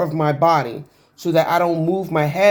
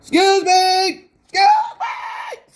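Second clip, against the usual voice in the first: very high, slow, swooping, drawn-out screaming cries. Retelling being left waiting thirty minutes and calling out: retelling own screaming. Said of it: "So I'm just screaming".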